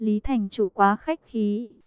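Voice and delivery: plain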